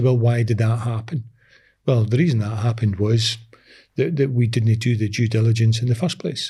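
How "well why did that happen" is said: ordinary talk, nothing marked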